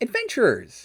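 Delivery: put-on squeaky, very high little-kid voice. Retelling what he said to the adventurers, in a little kid's voice. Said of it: "in a little kid's voice".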